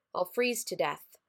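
ordinary delivery

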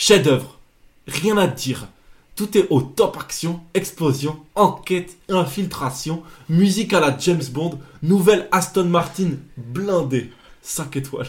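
put-on Belgian accent. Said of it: "de faire la même chose".

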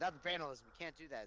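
ordinary talk

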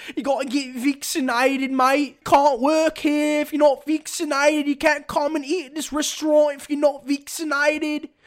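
fake Australian accent, pitched very high. Recalling the COVID vaccination rules: put-on Australian accent. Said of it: "I don't know why I always do the Australian accent".

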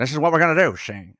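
fast, overemphasized, exaggerated 1920s-1930s old-timey voice. Describing how a man started talking: exaggerated 1920s-1930s style voice. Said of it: "he starts doing that overly emphasized 1920s, 1930s style of".

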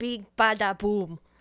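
imitated Russian-sounding accent. Imitating a woman's line from a taxi scene: Russian-sounding accent. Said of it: "Sounds Russian".

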